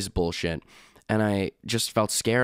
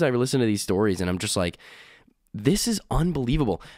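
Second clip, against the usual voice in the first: plain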